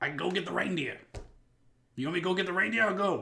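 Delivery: put-on loud, high Boston accent. Speaker voicing a character, trying to keep up a Boston accent. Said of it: "I'm gonna try to keep this Boston thing going".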